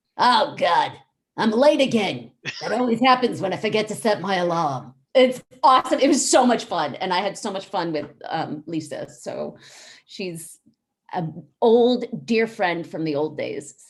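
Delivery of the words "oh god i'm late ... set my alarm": cartoon character voice of a girl. Showing the voice of a cartoon role just voiced: Kara Less voice. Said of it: "And she talks like this".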